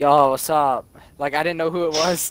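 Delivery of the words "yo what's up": sleepy, groggy, half-awake just-woke-up voice. Retelling answering a phone call after being woken up: imitating own groggy voice. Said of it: "all groggy and shit".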